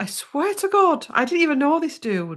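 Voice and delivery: high, loud, incredulous exclamation.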